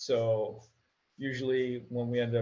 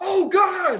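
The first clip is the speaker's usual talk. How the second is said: very high, very loud, shrill, panicked shriek; 10 dB louder than usual. Retelling seeing guns pointed at the car: imitating own panic. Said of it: "I start freaking out and panicking".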